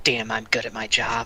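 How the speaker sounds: very low, half-whispered, muttering voice. A player voices their character, who is half-whispering to herself. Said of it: "She's gonna whisper to herself".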